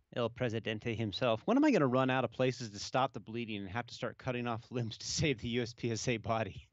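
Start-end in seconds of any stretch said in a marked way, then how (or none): none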